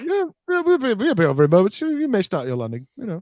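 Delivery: offhand breezy high delivery. Imitating General Veers delivering a line: imitating Veers sounding casual. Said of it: "Veers sounds so casual".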